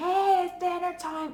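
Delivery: high, loud, drawn-out shout. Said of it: "rather than shouting".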